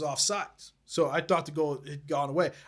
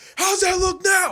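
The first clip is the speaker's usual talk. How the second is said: put-on taunting yell, higher and louder; 14 semitones higher, 8 dB louder than usual. Retelling taunting a rival fan at a game: imitating own yelling. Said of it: "I'm yelling".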